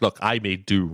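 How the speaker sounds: usual speaking voice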